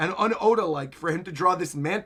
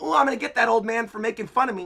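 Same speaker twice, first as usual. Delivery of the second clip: put-on high, childish scream, wailing like a small child; 5 semitones higher, 3 dB louder than usual. Recapping an anime scene, Luffy screaming like a little child in the background. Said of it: "screaming like a little child in the background".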